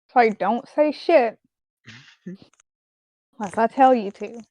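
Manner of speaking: hushed whispering. A player's character grabs another's hand and leans in, whispering. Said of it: "she leans in and she whispers".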